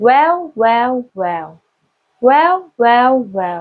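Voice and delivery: well repeated slowly, pitch shifting each time. Explaining Vietnamese tones, the speaker repeats one word: same word, shifting pitch. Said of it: "Same word but different pitch".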